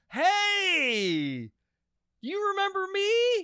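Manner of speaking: acted, very high, very slow cheery sing-song. Calling back the man who tried to scam him, a mock-cheery greeting. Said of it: "because I was real cheery".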